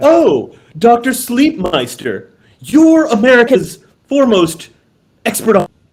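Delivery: over-eager, oddly enunciated, high swooping interested tone. Mock-interviewing an expert called doctor sleepmeister: super interested, weird enunciation. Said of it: "act super interested and like enunciate weirdly".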